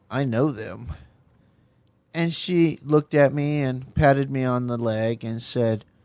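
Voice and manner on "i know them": mock smug, self-satisfied, knowing tone. Retelling leaning over to a girlfriend on the couch: imitating own smug tone. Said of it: "I leaned over to her kind of smugly and said".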